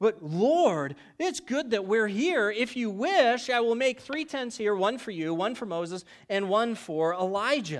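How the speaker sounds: put-on excited, high, kid-like gush. Retelling a story, the speaker acts out a man's words, retelling like an excited kid. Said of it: "you can kind of see him as a little kid in a candy shop".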